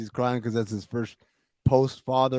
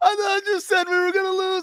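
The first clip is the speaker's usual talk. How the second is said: mock very high, sob-choked, sobbing scream; 4 dB louder than usual. Retelling a championship night, the speaker quotes a fan: imitating a sobbing, screaming fan. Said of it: "literally sobbing as he's like screaming at me".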